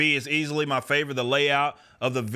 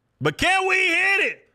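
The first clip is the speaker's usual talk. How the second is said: stoked, very high, excited scream; 4 dB louder than usual. Hoping to hit a book sales goal, excited screaming. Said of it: "Sorry for screaming in y'all's ear".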